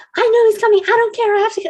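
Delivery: shrill, very high, loud yelled rant. Retelling a woman who needed to get to the spa: imitating a woman yelling. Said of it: "she starts yelling at me".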